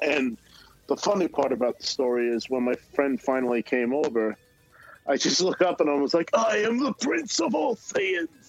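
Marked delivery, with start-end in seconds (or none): 6.3-8.3 very high, slow, drawn-out character voice. Retelling greeting a friend beside the voice actor's table: Vegeta impression. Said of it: "That was a great impression".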